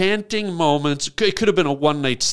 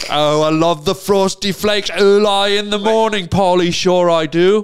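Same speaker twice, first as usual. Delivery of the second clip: put-on, mock English gentleman accent; 3 semitones higher, 6 dB louder than usual. Joking as two English gentlemen: put-on English gentleman accent. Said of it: "should we be talking like English gentlemen".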